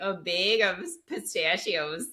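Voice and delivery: put-on drawn-out Minnesota accent. Teasing another speaker by repeating their words: imitating Carlin's Minnesota accent. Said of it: "you were like".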